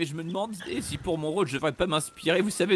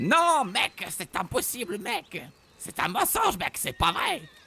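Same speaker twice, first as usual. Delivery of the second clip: put-on slangy street voice; 4 semitones higher than usual. Redoing a film's father reveal scene, imitating Uncle Eddie's talk. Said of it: "m'inspirer, vous savez, de l'oncle Eddie et parler comme ça, mec".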